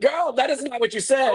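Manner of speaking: mock shrill, very high-pitched shrieking scream. Retelling a cast member jumping into the fight: imitating someone screaming. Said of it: "Kyle is screaming like".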